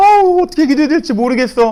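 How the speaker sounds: high, tearful crying wail.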